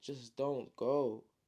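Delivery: play-acted tearful, crying, begging voice. Retelling a story, voicing a brother on the ground begging: acting crying. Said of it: "he's crying now".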